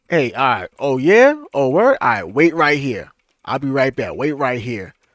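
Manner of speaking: threatening tone. Acting out someone who says they'll be right back: imitating a threatening tone. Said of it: "That sound like a threat".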